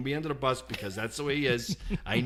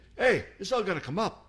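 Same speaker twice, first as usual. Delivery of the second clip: little put-on Italian accent voice; 6 semitones higher than usual. Retelling a man pointing at paper on the floor, in a little Italian voice. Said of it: "this little Italian voice".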